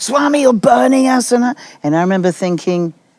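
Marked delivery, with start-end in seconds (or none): 0.0-1.3 mock woman's voice, high and screaming. Retelling a crowd scene, a woman in front screaming: imitating a woman screaming. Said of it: "a woman in front of me was screaming".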